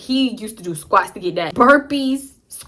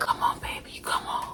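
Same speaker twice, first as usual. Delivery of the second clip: mock heavy-breathing moan. Retelling a man's advances, imitating heavy breathing moan. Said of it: "heavy breathing type of moan thing".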